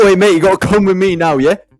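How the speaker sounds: mock-rude delivery. Speaker acting out how the other person went up to the lad; imitating an impolite tone. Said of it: "Come politely, but you go up to him like".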